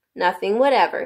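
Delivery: plain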